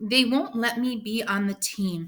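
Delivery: ordinary delivery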